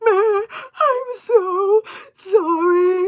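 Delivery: mock tearful crying, very high, loud, shrill, drawn out. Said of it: "she's, like, crying, and she's like".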